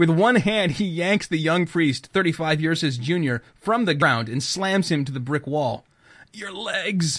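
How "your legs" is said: quiet croaking voice. A narrator reads Father Vince, slammed against a wall by an old man, croaking. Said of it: "Father Vince croaks".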